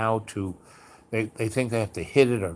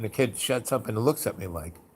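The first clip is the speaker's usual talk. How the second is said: plain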